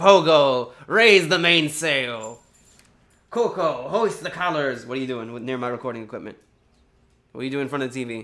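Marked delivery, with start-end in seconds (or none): 0.0-4.8 loud, very slow, bellowing pirate captain voice. Playing a pirate giving orders to the dog: put-on pirate voice. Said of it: "Oh, Pogo the pirate!".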